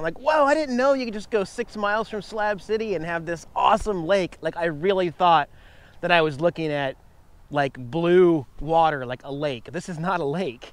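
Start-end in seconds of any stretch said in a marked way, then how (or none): 0.2-4.4 all-excited, high-pitched gushing burst. Just off Highway 111 near Slab City, the speaker retells their own excitement. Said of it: "I was like all excited".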